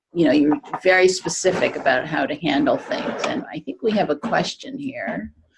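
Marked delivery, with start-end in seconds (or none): none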